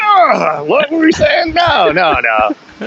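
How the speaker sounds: put-on horrified tone. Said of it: "Iris came out and we're like".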